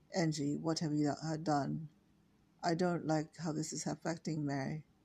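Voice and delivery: ordinary delivery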